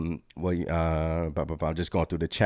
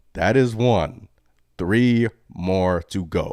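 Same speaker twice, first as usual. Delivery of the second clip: slow, drawn-out, deliberate emphatic delivery. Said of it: "that's one. Three more to go".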